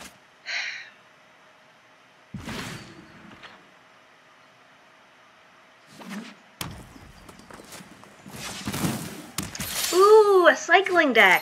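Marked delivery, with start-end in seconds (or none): 9.9-11.4 high, loud, excited squeal. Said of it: "I get excited when".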